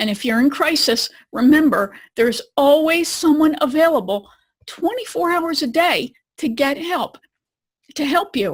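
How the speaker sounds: choked-up, emotional voice catching. Speaker addressing listeners directly, choked up. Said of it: "I get choked up just thinking about it".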